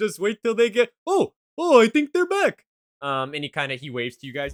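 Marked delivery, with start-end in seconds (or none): 0.0-2.6 character voice, laughing while talking. Voicing Yugi as the players enter the cave: Yugi laughing while talking. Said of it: "you hear Yugi laughing".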